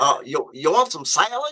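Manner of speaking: put-on Southern accent, serving lady voice. Retelling a cafeteria serving lady offering food: imitating a Southern serving lady. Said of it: "you imitate 'em, a, a Southern person".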